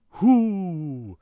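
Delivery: put-on, drawn-out, mild whoo. Imitating a television performer shouting his catchphrase: imitating a catchphrase shout. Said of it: "he loves shouting".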